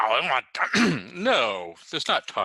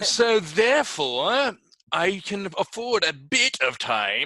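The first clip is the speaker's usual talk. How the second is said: fake, deliberately bad British accent, pitched high; 8 semitones higher than usual. In a comedy bit, speaking in a bad British accent. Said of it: "This is my version of a bad British accent".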